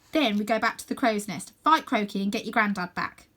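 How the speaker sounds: ordinary delivery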